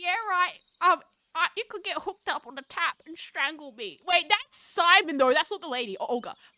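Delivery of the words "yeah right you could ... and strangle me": put-on old granny voice, higher pitch. Reading a story aloud, voicing a character: grandma voice. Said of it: "Grandma sounds like this, though".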